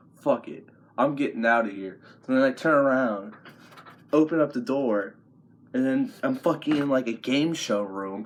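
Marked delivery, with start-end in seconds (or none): none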